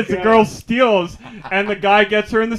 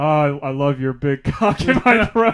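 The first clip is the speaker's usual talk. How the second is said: mock, very defeated tone, lower; 6 semitones lower than usual. Retelling how a girl in a video says her line: imitating a very defeated voice. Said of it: "very defeated".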